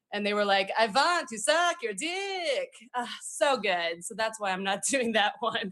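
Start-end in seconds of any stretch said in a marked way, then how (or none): 0.7-4.0 slow, lusty, horny vampire voice, "dick" drawn out. Speaker describing a bit they decided against, doing a super horny vampire impression. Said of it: "an impression of like a super horny vampire".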